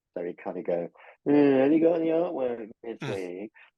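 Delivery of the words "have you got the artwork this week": high, swooping moan. Retelling how an editor phoned each week: imitating a moany voice. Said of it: "he had a kind of moany voice".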